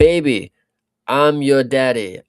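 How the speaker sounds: very loud, slow, deliberate bellow. Retelling a fighter's post-fight speech from memory: imitating Manel Kape's speech. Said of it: "give my best rendition of what I memorized".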